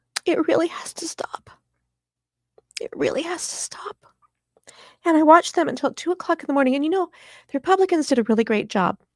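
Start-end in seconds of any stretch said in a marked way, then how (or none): 0.3-4.0 emotional high whisper, fighting back tears. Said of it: "I'm gonna get emotional".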